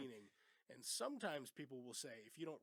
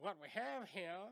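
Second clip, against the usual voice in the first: put-on effeminate voice, higher and louder; 6 semitones higher, 5 dB louder than usual. Quoting the Captain's famous line from the movie: the Captain from Cool Hand Luke voice. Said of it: "He's got kind of an effeminate voice".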